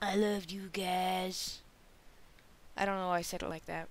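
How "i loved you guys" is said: slow, drawn-out, cheesy delivery. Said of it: "I do sound cheesy when I say that".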